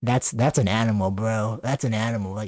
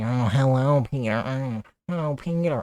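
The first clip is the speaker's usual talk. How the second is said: put-on cartoon mom voice, much slower; 2 semitones higher than usual. Ranking cartoon characters into tiers, doing a Lois Griffin voice. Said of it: "I can't really do the voice".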